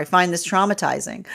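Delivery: ordinary talk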